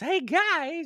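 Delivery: put-on very high small kid voice. Recalling speaking up to friends as a kid, in a really high voice. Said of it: "probably in a really high voice".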